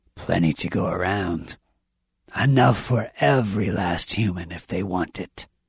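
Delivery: rasping voice. Narrator reads the accommodating calypsarian's line to the group: raspy. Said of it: "it rasps".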